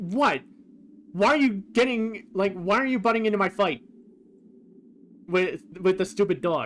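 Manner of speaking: irritated outburst. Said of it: "he sounds very much more annoyed".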